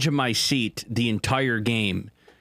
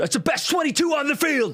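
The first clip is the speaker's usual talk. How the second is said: high-pitched, jeering yell. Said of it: "he's yelling at the people".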